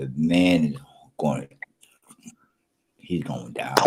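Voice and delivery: low, unvoiced, threatening whisper.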